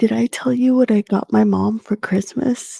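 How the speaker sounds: whispering. Asking another speaker a question so the mom won't hear: whispering. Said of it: "I'm gonna have to whisper this".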